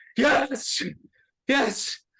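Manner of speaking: shrill high-pitched yell. Narrator voices Fiona on the battlefield after summoning a devil, Fiona yelling. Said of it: "and Fiona yells".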